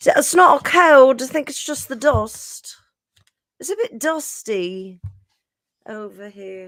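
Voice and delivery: put-on British accent. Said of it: "with my British accent".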